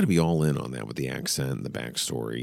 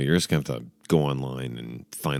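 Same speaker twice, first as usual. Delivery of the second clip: usual speaking voice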